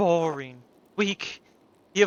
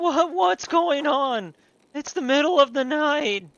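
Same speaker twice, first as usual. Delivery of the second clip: high-pitched cartoon voice, stumbling over words; 9 semitones higher than usual. Voicing the companion Jasper, who has just been woken up: Morty voice. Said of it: "I'm doing the Morty voice".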